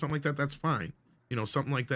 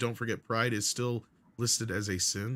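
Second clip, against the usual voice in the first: normal talking voice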